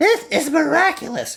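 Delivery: whiny, complaining voice. After the phone call, speaking to the secretary in a whiny voice. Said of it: "in his whiny voice".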